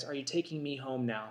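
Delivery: tearful, disappointed, put-on sad crying child voice. Retelling a hurt child's question from under a bike: imitating a sad crying child. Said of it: "really sad, just disappointed, crying".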